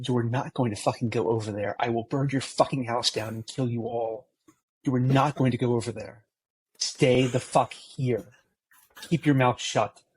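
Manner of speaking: threatening, menacing tone. Voicing a salesman who turns on Dot to stop her: threatening. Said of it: "I am going to turn on Dot, and I'm gonna say".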